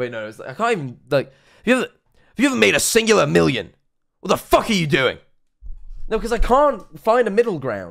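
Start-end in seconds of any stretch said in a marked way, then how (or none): 1.8-5.2 British and American vowels blended together. Struggling to get the accent right, the speaker tries Andrew Tate half-British accent. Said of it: "a half-British, half-American accent".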